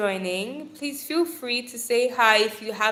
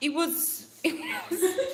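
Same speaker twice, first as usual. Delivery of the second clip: pitched-up words with laughter spilling in; 7 semitones higher, 3 dB quieter than usual. Telling a story about dead birds, laughing while talking. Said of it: "I'm not laughing about that".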